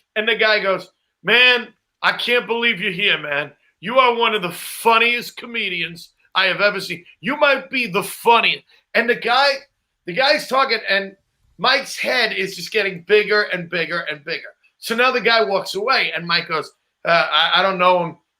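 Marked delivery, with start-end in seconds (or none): none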